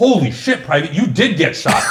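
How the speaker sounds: put-on delighted surprise, pleased, almost happy. Retelling a drill sergeant seeing the blood: imitating someone sounding happy. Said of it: "It was like he was happy".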